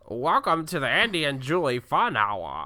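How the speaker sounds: put-on old-time 1960s announcer voice. A speaker doing impressions announces the show in a 60s announcer voice. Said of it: "I sound like a 60s announcer".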